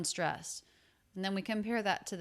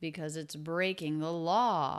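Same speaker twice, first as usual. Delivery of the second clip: peak emphasis lands on the word law; 2 semitones lower than usual. Repeating a sentence to find its most stressed word, law. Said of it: "I think it's law".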